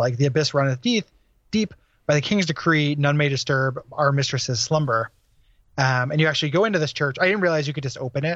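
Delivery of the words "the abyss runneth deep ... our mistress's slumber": ordinary talk, nothing marked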